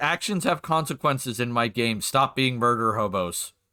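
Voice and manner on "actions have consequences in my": plain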